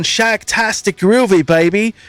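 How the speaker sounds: horrible put-on British accent. Imitating a dude people heard saying this from the car: horrible Austin Powers British accent. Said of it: "my horrible British accent".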